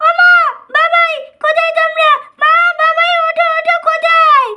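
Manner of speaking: loud yelling. Calling for mother and father to wake up, shouting. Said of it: "চিল্লাচ্ছিস কেন?".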